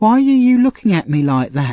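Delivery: frightened voice. Narrator reads a girl's words to a man who shouted at her; frightened voice. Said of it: "said the girl in a frightened voice".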